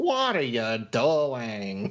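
clumsy, bad fake American accent, drawn-out. Recalling how someone mocked a nurse at a slumber party, put-on American accent. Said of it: "That's how you think the Americans sound?".

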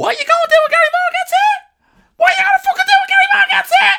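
very high, tiny squeaky voice at full volume. Retelling an overheard row, quoting the threatened man himself: imitating Gary's tiny squeaky voice. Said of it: "this tiny little squeaky voice being".

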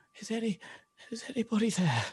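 wounded, hurt voice calling out. Voicing a stabbed half-elf asking if anybody is there: wounded half-elf calling out. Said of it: "he sort of looks up and goes".

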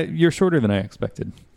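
ordinary delivery

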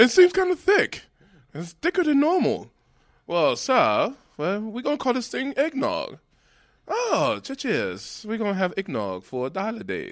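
put-on British accent, very high, sing-song. Storyteller acts out characters in a history of eggnog, British accent. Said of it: "go on in his British accent".

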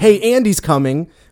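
high, loud shout. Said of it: "and you shouted".

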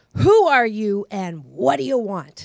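loud, demanding voice. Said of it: "she says".

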